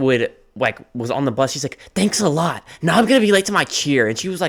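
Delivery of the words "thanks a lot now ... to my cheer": put-on high, bratty rich-girl tone. Retelling what a bratty girl on the bus said: imitating a bratty girl. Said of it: "being a bitch".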